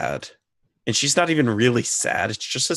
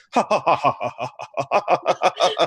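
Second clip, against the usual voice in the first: rowdy, slow hippo-like laugh, each ha spaced; 5 semitones higher than usual. Reading a story aloud as the other hippopotami laugh, with a loud boisterous laugh. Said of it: "laugh in a loud, boisterous voice".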